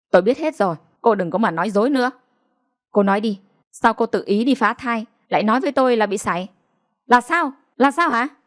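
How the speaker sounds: furious, angry ranting outburst. Reading a story where a husband accuses his wife: angry shouting. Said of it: "Ông Vượng quát lên".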